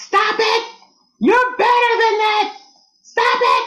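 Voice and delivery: mock very high, shrill, hollered-out cry. Retelling how a woman confronted people's slurs one holiday, retelling a holler. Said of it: "she hollers out".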